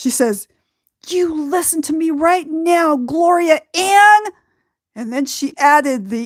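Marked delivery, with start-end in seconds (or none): 1.1-4.2 really angry, pitched-up scolding tone. Retelling how she scolded the speaker by full name: imitating someone angry. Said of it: "she's real mad now".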